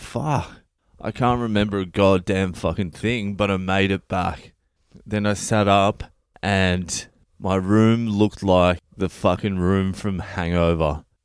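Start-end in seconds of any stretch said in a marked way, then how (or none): none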